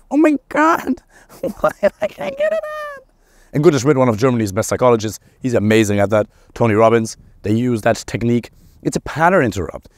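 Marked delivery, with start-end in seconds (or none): 0.1-3.0 high, silly squeaked-out voice. Demonstrating a pattern-interrupt technique for stressful thoughts, in a Donald Duck voice. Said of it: "make it sound so silly".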